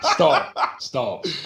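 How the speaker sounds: high, laughing, giggling stop.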